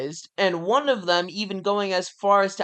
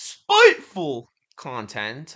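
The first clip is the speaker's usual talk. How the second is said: clumsy, swooping, sing-song put-on voice; 6 semitones lower than usual. Quoting how Sean would say a word, Sean impression. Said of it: "as Sean would say, ... I still can't do the voice".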